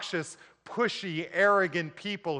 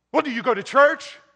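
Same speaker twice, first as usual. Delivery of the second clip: very loud, combative, spoiling-for-a-fight tone, pitched up; 8 semitones higher, 8 dB louder than usual. Recounting a man questioning him about being saved, the speaker imitates a combative tone. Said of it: "had this tone in his voice that seemed like he wanted to pick a fight".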